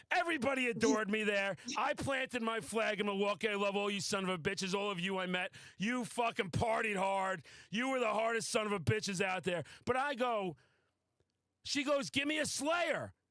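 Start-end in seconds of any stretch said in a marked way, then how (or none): 12.1-13.1 put-on, high-pitched shouting voice. Retelling what a woman asked for, imitating someone yelling. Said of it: "she's yelling for me to yell a Slayer".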